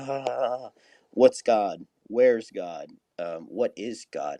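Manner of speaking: put-on laughter through words. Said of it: "is laughing".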